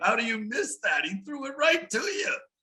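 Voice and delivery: play-acted, very high, stretched-out rising scream. Retelling a missed catch in a game: imitating own screaming. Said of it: "I was screaming".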